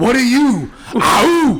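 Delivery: yelled Spartan warrior battle cry.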